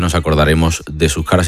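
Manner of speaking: usual speaking voice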